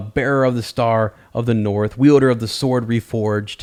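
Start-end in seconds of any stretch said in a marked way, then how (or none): none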